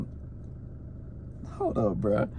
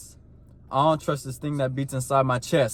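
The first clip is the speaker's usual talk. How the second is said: ordinary delivery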